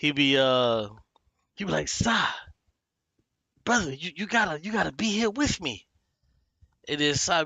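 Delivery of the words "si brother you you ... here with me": mock frantic, crazed ranting, higher pitched. Retelling how a comedian always goes crazy on stream: imitating a guy going crazy. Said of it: "This dude always goes crazy".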